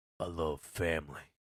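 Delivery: attempted deep voice, dropped as low as it goes. Talking about Dom in Fast and Furious, try to get Vin Diesel's deep voice. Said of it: "let me try to get that deep voice".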